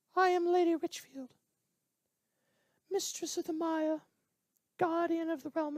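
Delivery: very high, squeaky character voice. Voicing a character who introduces herself, squeaky Lady Richfield voice. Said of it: "my voice squeaked".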